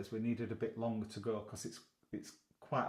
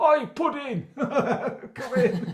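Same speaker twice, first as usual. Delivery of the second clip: put-on shouting call, higher and louder; 14 dB louder than usual. Imagining calling a dog named Pudding in from the back door: mock calling a dog in. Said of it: "Can you imagine standing at back door saying".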